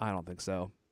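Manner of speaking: quiet "no", "I" stressed.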